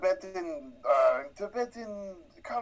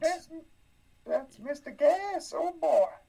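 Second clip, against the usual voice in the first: put-on Southern child voice, much higher; 10 semitones higher than usual. Doing the Mr. Gas bit, in a Mr. Gas voice like a Southern child. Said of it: "I don't know why I sounded like one".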